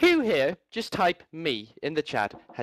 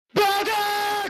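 shrill, very high screamed word; 3 dB louder than usual. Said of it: "Scream Bulldog".

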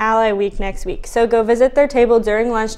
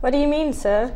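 soft, unconvincing fake British accent; 2 semitones higher, 5 dB quieter than usual. Doing the news with the team, answering a teammate's jab, in a bad british accent. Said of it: "It doesn't even sound British".

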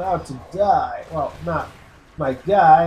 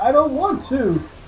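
very high, slow put-on English accent; 9 semitones higher than usual. Repeating a co-worker's words: imitating co-worker's English accent. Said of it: "talk with an English accent".

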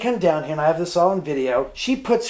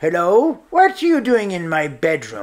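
put-on elderly man's voice. Describing a voice heard on a recording, imitating an old man's voice. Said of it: "like an old man saying".

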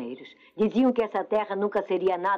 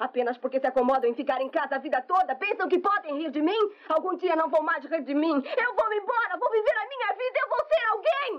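crying with rage, voice very high, tearful; 10 semitones higher than usual. Drama scene, just before someone tells them to stop crying: crying in anger. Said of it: "pare de chorar".

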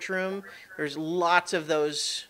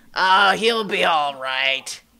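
put-on booming, very loud elderly man voice; 8 dB louder than usual. Voicing what comes out of a bird's opened beak: old man voice. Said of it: "like, an old man kinda go".

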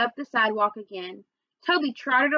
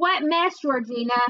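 usual speaking voice

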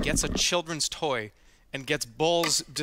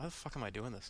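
put-on mutter under breath, lower and quieter; 3 semitones lower, 15 dB quieter than usual. Retelling a remark made while looking at the setup: imitating muttering under breath. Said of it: "I just said kind of under my breath".

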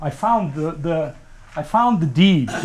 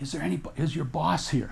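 put-on whisper, much quieter; 9 dB quieter than usual. Retelling asking a librarian questions in a dark, empty room, retelling a whisper. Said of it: "And I'm whispering".

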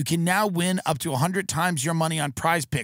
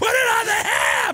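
mock, very high, stretched-out, drawn-out screaming; 4 dB louder than usual. Recounting a childhood moment, reenacting how the speaker started screaming: retelling a childhood scream. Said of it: "I started screaming".

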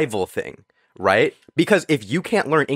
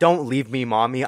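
mock crying in a child's voice. Imitating own past self as a child left at daycare: imitating crying child. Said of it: "I'm crying".

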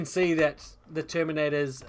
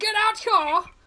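shrill, loud, high-pitched bellow; 7 dB louder than usual. One of the guards smashes open the door above, shouting. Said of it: "smashes open the door above and shouts".

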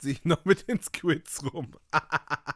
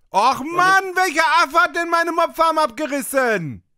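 very loud, very high, shrill, fed-up, annoyed yell; 12 semitones higher, 10 dB louder than usual. Playing a game on stream, the player is shouting in annoyance. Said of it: "Kein Grund zu schreien".

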